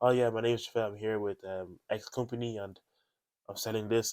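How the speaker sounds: mock monotone, flat, unenthusiastic, no expression. Retelling knocking on doors selling electricity and gas, imitating own past monotone. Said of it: "I spoke in like a monotone voice".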